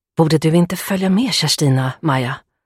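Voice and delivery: nervously whispered, anxious. Narrator reads a woman's question to a friend at a wedding: nervous whisper. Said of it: "Viskade Hedvig nervöst".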